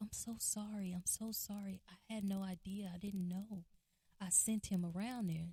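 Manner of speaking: ordinary talk, nothing marked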